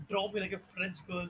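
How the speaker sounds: usual speaking voice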